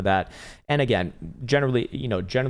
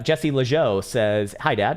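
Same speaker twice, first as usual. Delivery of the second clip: ordinary delivery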